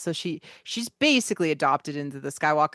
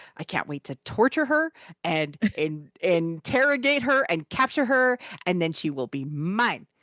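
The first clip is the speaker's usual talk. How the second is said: ordinary talk, nothing marked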